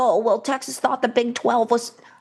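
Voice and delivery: derisive, mocking put-on voice. Arguing sports with a co-host, mimicking a hypothetical speaker: voice used to imitate co-host. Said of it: "That's the same voice you use for me".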